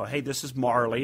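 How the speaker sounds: ordinary talk, nothing marked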